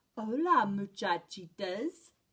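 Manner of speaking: gentle, soft, mooey-mooey tone. Reading a story aloud, the kitty boy greets everyone in a soft voice. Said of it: "he said in a mooey, mooey, soft voice".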